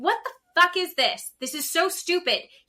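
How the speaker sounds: acted, furious, high and loud screaming. Retelling watching a show that made the speaker angry: reenacted screaming at the TV. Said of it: "I'm screaming at the T V".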